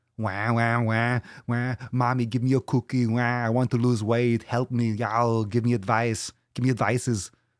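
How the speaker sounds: exaggerated mock whiny crybaby wail.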